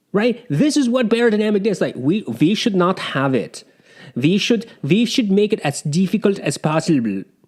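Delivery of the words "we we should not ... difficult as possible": clumsy, bad, put-on German accent. Imitating the headphone designers planning their pads: attempted German accent. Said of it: "I can't do a German accent".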